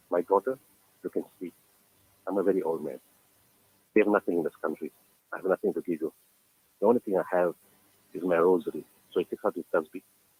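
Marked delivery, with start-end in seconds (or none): none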